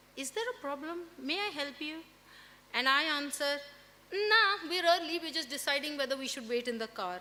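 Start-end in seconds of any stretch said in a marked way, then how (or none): 0.2-2.0 put-on very sweet, syrupy, honey-sweet helpful voice. Telling how a lady came up behind her and her daughter, imitating a very sweet voice. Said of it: "very, very sweet voice behind us".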